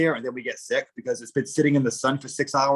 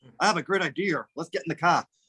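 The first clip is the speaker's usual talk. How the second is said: Boston South Shore pronunciation; 4 semitones higher than usual. Speaker showing how words are said in their South Shore accent. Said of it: "I have the South Shore accent".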